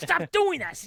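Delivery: very high-pitched yelling. Retelling how a mom next to her yelled at her kid: imitating a mom yelling. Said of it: "she is yelling at her kid".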